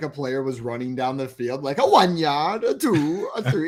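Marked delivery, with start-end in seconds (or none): 1.8-3.7 very slow, sing-song German accent slipping in. Imagining an announcer counting yards like the owl: accidental german accent. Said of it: "now I'm becoming German".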